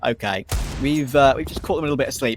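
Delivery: ordinary talk, nothing marked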